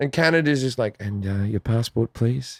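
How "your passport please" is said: quiet, much lower and softer. Speaker imitating Canadian airport staff asking for a passport, quiet.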